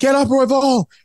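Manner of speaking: put-on screaming, high-pitched yell. Retelling watching a fight on tv: imitating screaming at the tv. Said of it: "I was screaming at the T V".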